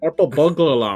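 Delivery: put-on Scottish accent. Taking up a challenge to say a tricky phrase, in a Scottish accent. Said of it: "in a Scottish accent".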